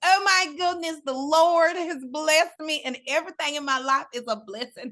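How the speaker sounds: put-on high, gushing, effusive girlish voice.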